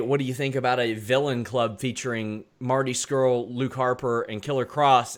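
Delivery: ordinary talk, nothing marked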